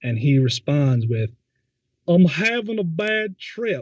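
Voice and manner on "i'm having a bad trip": very high, slow mocking mimicry, slight put-on accent. Retelling how a friend mimicked the speaker: mocking imitation with a little accent. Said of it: "mimicking me and adding a little accent to it".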